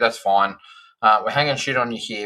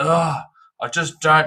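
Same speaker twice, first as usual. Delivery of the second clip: put-on frustrated, dramatic voice, higher; 6 semitones higher than usual. Retelling what Kevin said when frustrated: imitating Kevin being frustrated and dramatic. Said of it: "he gets real dramatic".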